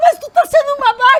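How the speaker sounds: very high, very loud, shrill, heated shouting. Speaker retells friends shouting at each other in a car while André honked, retelling a yell. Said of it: "a gente começou no carro a gritar".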